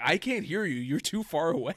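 put-on light calling out. Retelling calling to someone far off in a parking garage: imitating shouting. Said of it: "I'm yelling in the parking garage".

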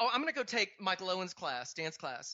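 plain

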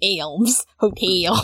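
put-on Baltimore pronunciation. Laughing at a slip just made, repeating own Baltimore accent. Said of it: "All that Baltimore".

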